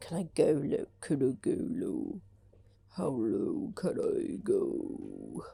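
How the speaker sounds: very slow, deep, husky, sick-sounding voice. Testing whether their voice is going low, in a deep husky voice. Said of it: "Is it going low though?".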